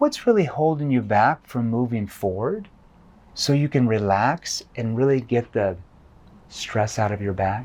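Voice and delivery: low, concerned tone. Showing how to ask a prospect a question in a lowered concerned tone. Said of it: "using a concerned tone. ... And I lower my tone".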